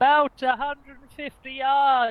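high, loud, shrill shouted call. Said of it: "she has got a very shrill voice".

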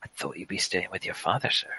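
very quiet, hushed whisper. A character whispers to the player, out of earshot of the foreign fella, quiet whisper. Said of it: "he quietly whispers".

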